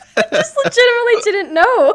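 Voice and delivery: high, loud, laughing disbelief.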